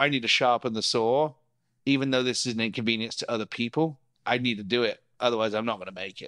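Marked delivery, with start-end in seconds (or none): none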